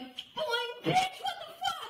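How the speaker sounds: play-acted, very high, worked-up, riled-up outburst. Retelling their own reaction to the man: imitating own angry outburst. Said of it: "I was so riled up immediately".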